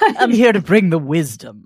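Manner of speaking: very loud, swooping, grand village elder voice. Saying she is now the most senior person in the room, in a village elder voice. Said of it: "I don't know why I keep using this voice".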